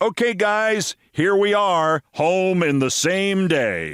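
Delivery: booming, loud, slow announcer-style voice. Passing a woman on the way home, addressing the dogs in a loud announcer voice. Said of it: "in my most announcerish voice".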